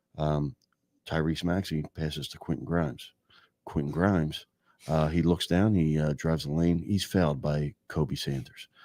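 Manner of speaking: low, flat, no-energy monotone. Imitating someone dictating basketball play-by-play like professor notes, flat monotone. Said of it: "He's doing it monotone, like he's dictating like college professor notes".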